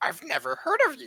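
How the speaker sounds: very high, rough little croaking voice. Acting out lowering your mouth flap to speak and putting it back up, sound like Yoda. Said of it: "Now I'm like Yoda".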